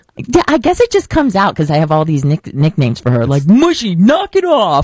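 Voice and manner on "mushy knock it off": firm, slow, pitched-up scolding. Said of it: "this really deep voice".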